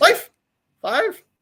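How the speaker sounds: put-on, mocking German accent, very high. Mimicking someone asking the dog Oreo for a paw, German accent. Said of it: "like this in a German accent".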